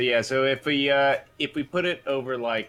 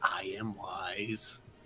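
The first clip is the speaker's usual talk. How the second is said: hushed, soft, solemn whisper, wise stretched out; 5 semitones lower, 9 dB quieter than usual. Retelling what the one surviving crab said to him, as the crab's whisper. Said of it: "just whispers".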